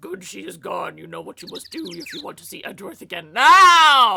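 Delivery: deep demonic voice. Player imagining a demonic voice emerging from a character, deep demonic voice. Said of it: "a deep demonic voice emerged that said".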